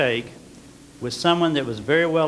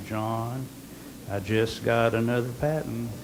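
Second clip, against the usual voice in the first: put-on slow Southern American drawl; 4 semitones lower, 6 dB quieter than usual. Recalling what he would say to a salesman in the corridors, Southern accent. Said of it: "in my very, very best Southern accent".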